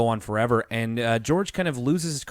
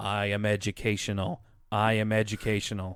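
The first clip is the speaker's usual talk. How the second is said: toneless, flat, emotionless robotic machine drone; 2 semitones lower, 5 dB quieter than usual. Retelling a cartoon scene where a character is zapped: emotionless robot voice. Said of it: "he just immediately loses all emotion".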